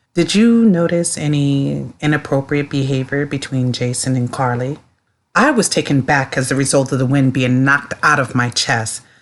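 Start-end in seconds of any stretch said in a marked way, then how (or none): 0.2-4.8 put-on very flat monotone voice, lower. Retelling how he sat up, cleared his throat and asked: imitating a very monotone voice. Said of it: "asks me with a very monotone voice".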